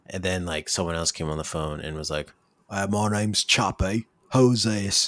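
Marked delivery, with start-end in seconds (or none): 2.6-5.0 put-on slow, assumed British accent. Retelling a cousin taking the phone: imitating a british accent. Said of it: "They're all British, it seems".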